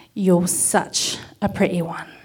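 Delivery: put-on speaking with an English accent. Retelling what James said after kissing the speaker: imitating James's English accent. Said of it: "said in an English accent".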